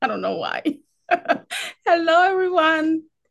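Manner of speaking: talking through laughter. Greeting everyone at the start, laughing while talking. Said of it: "I'm already laughing".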